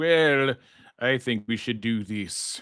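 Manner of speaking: slow, prim, unconvincing put-on British accent. Contrasting America with polite, tea-sipping people in the UK: mock British accent. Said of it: "that was not an actual British accent".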